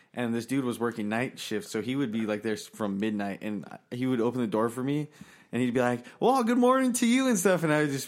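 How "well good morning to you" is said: mock, way too energetic, very high-pitched. Retelling a night-shift coworker's greeting at 3 am: imitating an overly energetic greeting. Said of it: "this guy's got too high level energy for three A M".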